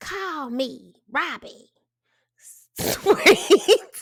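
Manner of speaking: very slow, drawn-out, high-pitched granny voice. Sharing what Miss Robbie sent her grandson, speak as Robbie, imitating her voice. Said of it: "That's actually how she sound".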